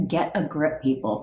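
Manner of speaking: put-on British accent. Imitating a friend's son telling people to get a grip: British accent. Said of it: "but in a U K tone".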